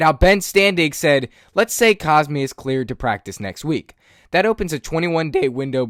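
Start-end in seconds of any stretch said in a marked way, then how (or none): 4.3-5.9 voice breaks mid-sentence. Speaker discussing a player's practice timeline, voice cracking. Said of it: "Sorry about that voice crack".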